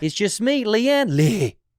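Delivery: very high, loud, slow southern drawl.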